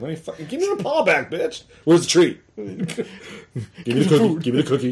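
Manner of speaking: high talking-dog voice. Retelling how the dog looks when asked to shake: voicing her dog. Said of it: "She just looks at me like".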